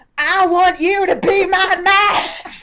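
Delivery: full-throated, high, loud yelling. Reading a story aloud, repeating a character's yelled line when asked, yelling. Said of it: "Tone it down there".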